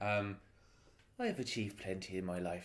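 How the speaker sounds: low-key, low, hushed, subdued murmur. A player's halfling leans on the table and speaks to the others, speaking quietly. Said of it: "says quietly in halfling".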